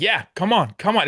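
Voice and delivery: put-on chirping, hyped-up delivery. Retelling a player's huddle on national TV: imitating Westbrook yelling. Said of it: "yelling the whole time".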